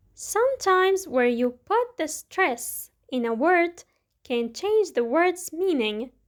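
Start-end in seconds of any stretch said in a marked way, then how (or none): none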